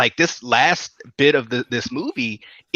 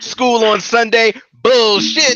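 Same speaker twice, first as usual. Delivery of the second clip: mock emphatic delivery, slower; 8 semitones higher, 6 dB louder than usual. Showing the other speaker the emphasis Roger put on it: imitating Roger's emphasis. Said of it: "You didn't put the emphasis in it that Roger did".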